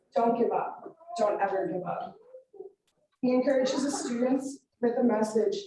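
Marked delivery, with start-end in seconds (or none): none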